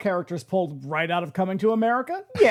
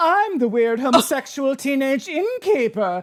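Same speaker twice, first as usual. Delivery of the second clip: mocking flamboyant theatrical voice, higher pitch; 4 semitones higher than usual. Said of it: "Fucking flouncing around the porch".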